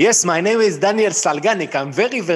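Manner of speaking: accent from Israel. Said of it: "אני מדבר כמו דודו פרוק באנגלית".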